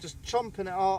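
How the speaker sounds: ordinary delivery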